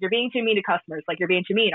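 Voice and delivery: normal talking voice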